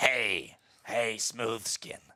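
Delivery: monster-like, creature-like ghoul voice. Joking with others that he sounds like a ghoul from Fallout; Fallout ghoul voice. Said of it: "I sound like a ghoul from um, from Fallout".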